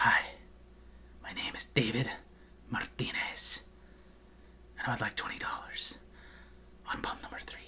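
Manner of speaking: theatrical, dramatic, hushed, breathy whispered grand delivery. Imitating dad ordering gas, imitating dad's dramatic manner. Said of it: "he's very dramatic about everything".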